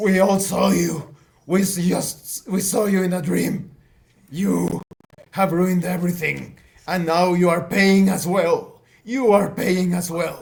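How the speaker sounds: loud bellowing, roaring yell. A game master voices a former Stasi member as the mansion collapses, roaring and yelling. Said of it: "The former Stasi member roars and yells".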